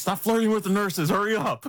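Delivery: loud, yelling sergeant-style voice. Telling a story, quoting his team sergeant yelling at him: retelling a sergeant's yell. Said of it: "my team sergeant is like yelling at me".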